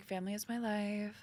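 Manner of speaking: soft, slow, laid-back, chill, easy delivery. Showing how the Palisades mom character talks: chill Palisades mom voice. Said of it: "and she talks like this".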